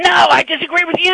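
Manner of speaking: very high, shrieking, screaming outburst. Retelling a caller's reply during a radio call, imitating someone screaming. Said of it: "And he's screaming at me again".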